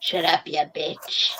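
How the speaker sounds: put-on whispery, hushed little old man voice. Imagining what a cute dog might really be saying, in a little old man voice. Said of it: "some like little old man voice going".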